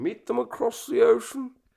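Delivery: raspy British statesman accent. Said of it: "straight up Churchill accent".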